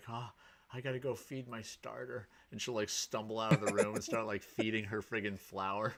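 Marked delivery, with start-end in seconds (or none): 0.1-2.3 put-on groggy, very tired, flat monotone voice. Retelling what she says when waking at midnight, imitating someone super tired. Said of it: "super, super tired".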